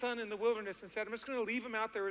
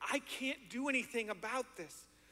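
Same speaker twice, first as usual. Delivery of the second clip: mock-hopeless, despairing voice; 4 dB quieter than usual. Speaker retelling the father's words to Jesus in Luke 9, acting out hopeless father. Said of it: "you can just hear the hopelessness in this dad's voice".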